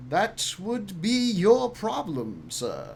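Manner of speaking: slow, swooping, plummy upper-class drawl. Voicing a man answering the captain dismissively: posh voice. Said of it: "This guy's so posh".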